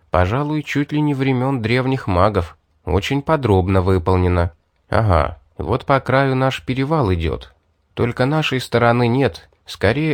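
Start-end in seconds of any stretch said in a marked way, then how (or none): none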